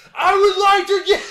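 shrill, loud screaming. Retelling an actor's scene ordering drinks, imitating his screaming.

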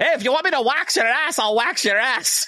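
put-on Irish accent pitched very high. Retelling what the waxing lady said across the salon, in an Irish accent. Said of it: "In a, an Irish".

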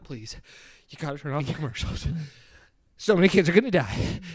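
imploring, pleading, begging tone. Describing a crazy doctor in a TV commercial, imitating someone pleading. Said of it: "when he starts out being like".

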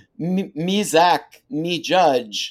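tongue-tied, flustered stammer, very high, loud and slow. Retelling being starstruck in an elevator: imitating own flustered stammer. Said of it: "literally cannot make sentences".

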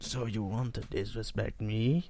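put-on Italian mobster accent, slowed. Asked to do a Godfather, trying a line: mock Godfather Italian accent. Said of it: "do a Godfather".

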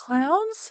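very high, squeaky voice, rising on "clowns".

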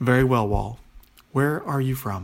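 ordinary delivery

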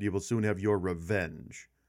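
usual speaking voice

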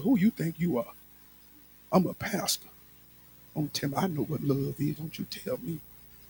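put-on muttering under breath. Retelling own angry reply to an aunt: imitating muttering under breath. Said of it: "I'm saying under my breath too".

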